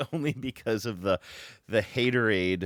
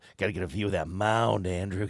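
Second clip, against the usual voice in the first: mock lascivious, suggestive tone. Mimicking how the other speaker just said a line: imitating a lascivious tone. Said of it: "That's what it sounded like".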